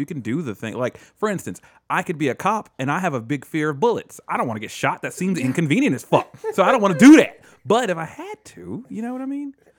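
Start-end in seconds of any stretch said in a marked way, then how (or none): 6.5-7.4 sudden loud shout. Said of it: "didn't mean to shout right into the mic".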